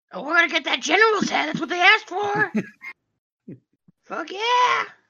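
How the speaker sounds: squawky, gull-like seagull voice. A player voicing a character in a role-play game, seagull voice. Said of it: "That's the seagull voice if I've ever heard it".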